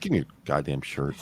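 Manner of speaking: low, dead serious deadpan. Recalling a film scene where a woman demands a man's shirt: retelling a deadpan line. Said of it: "she just looks at him deadpan and says".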